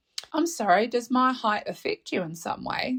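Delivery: put-on little girl voice, innocent, vulnerable. Confronting a man who kept commenting on the speaker, put-on little girl voice. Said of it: "in my little girl, vulnerable, innocent voice".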